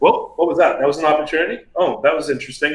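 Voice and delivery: ordinary talk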